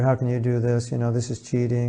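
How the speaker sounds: ordinary talk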